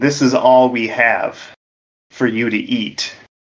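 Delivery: whispering. Retelling how a director offered pizza to an actor: imitating someone whispering. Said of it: "you can hear him whispering".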